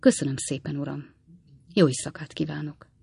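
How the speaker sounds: ordinary delivery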